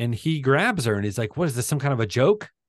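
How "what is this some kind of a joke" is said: put-on furious man voice, higher. Retelling a movie scene where he grabs her: imitating a furious man. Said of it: "he's furious".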